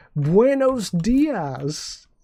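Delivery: high, very slow broken Spanish, syllables drawn out. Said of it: "talking slow".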